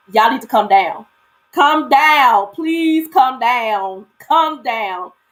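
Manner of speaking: put-on pleading, begging voice. Retelling calling up to people in a window: retelling own begging. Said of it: "And I am begging him to come down".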